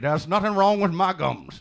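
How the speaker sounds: put-on Southern gentleman voice. Joking about gums while talking like the man who owns KFC. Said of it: "I'm just talking like the man who owns K F C".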